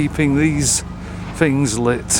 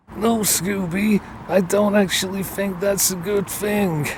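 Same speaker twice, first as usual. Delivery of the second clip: bad, terrible, high, pitched-up put-on cartoon voice; 5 semitones higher than usual. Recalling a Scooby-Doo movie scene, quoting Shaggy's reply to Scooby, terrible Shaggy impression. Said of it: "that's probably a terrible impression of them".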